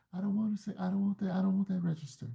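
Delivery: put-on soft, high child-like voice. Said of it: "speaking in a high voice like this".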